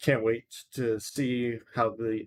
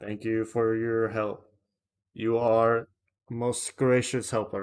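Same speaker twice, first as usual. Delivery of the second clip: sounding like a robot. Host thanking Hunter for help in the chat, sounding like a robot. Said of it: "I just sounded like a robot doing that".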